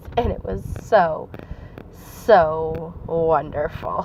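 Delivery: heavy, drawn-out sarcasm. Telling listeners about a recent experience, very sarcastic. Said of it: "If you can't hear the sarcasm".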